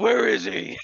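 very high, very loud, hard yell. Joking about interrogating someone for Magneto's whereabouts: Batman voice. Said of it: "you sound like Batman".

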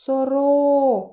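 сорока, stress on ро. Teacher imagines calling a magpie to find the stress: stress on 'ро' in сорока. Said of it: "Який склад я вимовляла голосніше? Другий, правильно".

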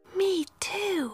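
in a whisper. Narrating a little girl's reply after lights out at bedtime, whispering. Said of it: "whispered Miffy".

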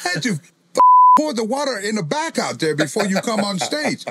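high, loud, swooping, full-on angry yell. Retelling how he scolded a wrestler for pouring water: retelling own yell. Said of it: "I'm yelling at Jacob for pouring".

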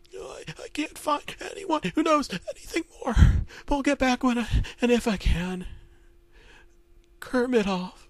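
very high voice, cracking, holding back tears. Reading a story aloud, Kermit the Frog reads radio news: scared Kermit voice, breaking near tears. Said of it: "His voice every so often would break as he was trying not to cry".

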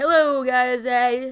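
loud exaggerated Canadian accent. Asked about accents, showing how everyone thinks Canadians sound; stereotypical Canadian accent. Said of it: "Canadian, everybody thinks they're like".

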